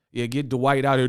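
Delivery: ordinary talk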